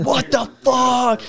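yell, pitched very high. Telling a golf story, the speaker acts out a man yelling at players behind; retelling a stranger's yell. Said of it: "he's like yelling at the guys behind us".

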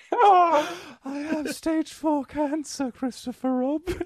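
very high, slow, drawn-out dying cartoon bear voice. Telling Christopher Robin about being ill: dying Winnie the Pooh voice. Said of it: "Winnie the Pooh dying".

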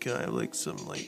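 low, whispered, timid, hesitant mumble. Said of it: "be like".

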